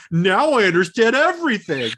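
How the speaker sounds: swooping sarcastic tone. Retelling what a moviegoer said walking out of the theater: imitating a sarcastic remark. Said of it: "sarcastically going".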